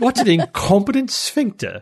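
put-on British accent for show, swooping. Joking that a medical term sounds like a sophisticated insult: british accent. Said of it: "You have to say it with a British accent".

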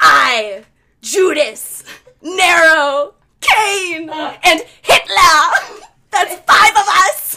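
put-on loud, high, possessed demon voice with German accent. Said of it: "that little German accent".

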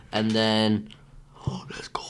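unvoiced, hushed villain whisper.

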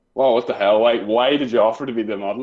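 ordinary talk

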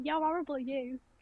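put-on Rochdale accent with dropped H's. Showing how people from Rochdale talk: Rochdale accent, dropped H's. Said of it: "I could talk like I'm from Rochdale".

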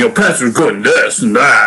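plain

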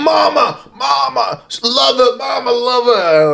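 mock very high, very slow, rasping, rough holler. Retelling someone sprinting away and yelling to his mom: imitating someone yelling. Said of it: "he's yelling to his mom".

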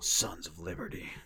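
deep soldier voice, pitch dropped low. Speaker announcing number six on his game list, in Solid Snake voice. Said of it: "That's my Solid Snake voice".

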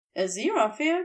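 plain

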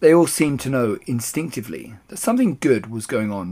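ordinary delivery

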